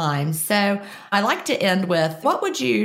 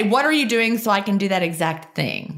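ordinary talk

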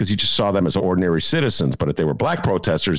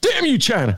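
very high put-on voice, exclaimed. Doing a friend's impression of Alex Jones while walking: Alex Jones impression. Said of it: "That's me imitating Dennis, imitating Alex Jones".

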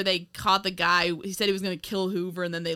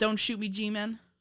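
normal talking voice

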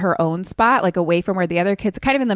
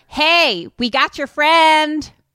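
shrill, very high-pitched, loud shout; 9 semitones higher, 5 dB louder than usual. Narrating a scenario where Tucker stands up in the boat: yelling as Tucker. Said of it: "Tucker stands up and yells".

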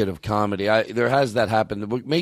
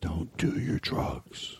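hushed whisper, lower and quieter; 5 semitones lower, 9 dB quieter than usual. Speaking to someone during a live show, whispering. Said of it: "I have to whisper it".

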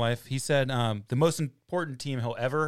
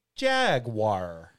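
jaguar stressed with exaggerated gusto; 3 semitones lower than usual. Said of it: "Why'd you say it like that?".

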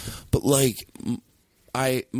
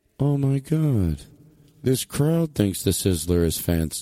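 echoing, slow inner voice. Acting out a stage bit, speaking a private thought as if echoing. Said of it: "Where's my echo?".

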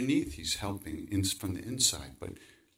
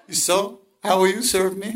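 mock hard laughing, much higher, louder; 11 semitones higher, 12 dB louder than usual. Quoting a man's final instructions to the speaker, retelling someone laughing hard. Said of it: "He laughed so hard".

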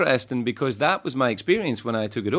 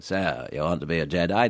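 put-on very low, slow posh English accent; 6 semitones lower, 4 dB quieter than usual. Explaining how an English accent makes lines sound clever, doing an Alec Guinness impression. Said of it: "when you get Alec Guinness to play him".

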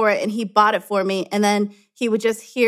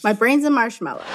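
ordinary talk, nothing marked

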